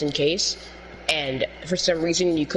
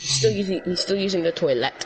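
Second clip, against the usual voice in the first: sudden switch into an English accent; 3 semitones higher than usual. Saying someone is still using the toilet: British accent. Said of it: "why was I speaking in a British accent?".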